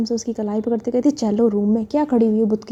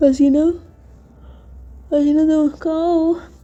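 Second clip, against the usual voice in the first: pitched-up call spoken through a yawn; 5 semitones higher than usual. Narrating a woman waking up and calling for someone missing, yawning. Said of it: "ऐसी उबासी लेते हुए".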